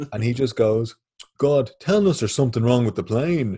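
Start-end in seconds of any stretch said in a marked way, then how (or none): 1.4-3.6 booming, loud, carrying delivery. Retelling what a man behind her in the plane queue said, really loudly. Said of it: "really loudly".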